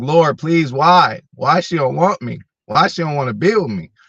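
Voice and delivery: crying, high, tearful begging plea. Retelling crying in the shower after heartbreak: imitating own past crying. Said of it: "I done been in the shower crying".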